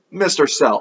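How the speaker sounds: plain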